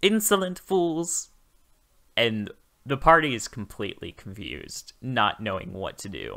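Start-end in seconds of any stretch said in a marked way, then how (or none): 0.0-1.3 put-on, very high-pitched monster voice. A player voicing their character's line to the party, in a very high, loud voice. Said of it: "I say in a very high voice".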